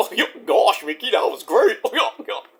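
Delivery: goofy cartoon dog sidekick voice. Answer Mickey's question about Monday Night Raw in a Goofy voice. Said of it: "What do you think about that, Goofy?".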